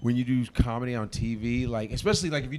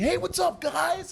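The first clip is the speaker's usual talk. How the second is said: fake, hyped stage delivery, pitched higher. Showing how comedians open a special: imitating phony comedy-special energy. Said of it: "you do that phony energy".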